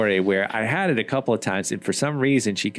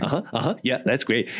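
mock absent-minded DJ voice. Retelling a scene where a DJ ignores the band: imitating Harry Shearer as a distracted DJ. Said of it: "That's a great imitation of him".

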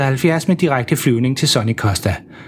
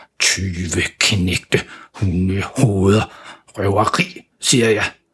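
muttered under the breath, lower and slower; 6 semitones lower than usual. A father paying reluctantly grumbles so the guard can't hear: muttering under his breath. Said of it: "han mumler for sig selv".

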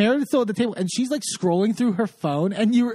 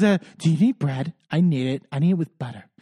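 put-on whisper, much lower, slower; 6 semitones lower than usual. Retelling what a woman said, the speaker imitates her whisper. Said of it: "she whispers".

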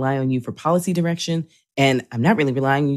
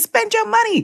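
mock very high, eager, excited holler. Retelling how the mayor yells at tourists: imitating someone yelling. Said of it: "he's yelling at tourists".

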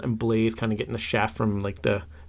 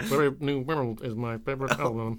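robotic voice with lips flicked; 4 dB quieter than usual. Doing an impression by flicking the lips: Stephen Hawking impression, lips flicked. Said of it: "[name]'s impression of Stephen Hawking, ... is flicking your lips as you speak".

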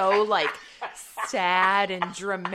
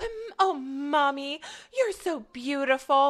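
mock-sweet little girl voice, higher pitch; 7 semitones higher than usual. Retelling a movie scene, imitating a sweet little girl. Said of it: "'Cause her daughter goes".

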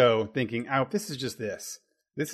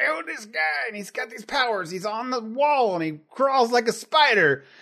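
voice pushed way up high; 11 semitones higher, 4 dB louder than usual. Acting out a pitch meeting, imitating Stan Lee like Bill Cosby. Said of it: "why does your Stan Lee sound like Bill Cosby".

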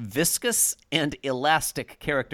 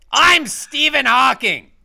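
very high, very loud, shrill, belted voice; 11 semitones higher, 11 dB louder than usual. Joking about a different synthetic voice, Gilbert Gottfried voice. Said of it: "a Gilbert Gottfried voice".

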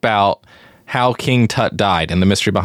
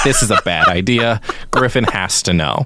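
ordinary talk

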